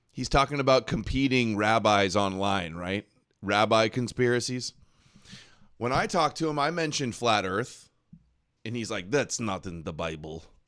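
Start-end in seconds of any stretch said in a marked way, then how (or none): 9.1-10.5 put-on Russian man's accent. Quoting a man's reply about flat Earth, imitating the Russian guy's voice. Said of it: "I'm doing the Russian guy's voice".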